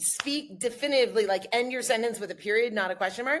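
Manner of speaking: normal talking voice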